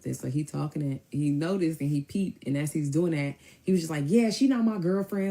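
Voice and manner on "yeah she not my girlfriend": put-on raised, loud, high, carrying voice. Retelling what a man said right into a woman's ear: imitating someone talking loudly. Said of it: "loud in her ear".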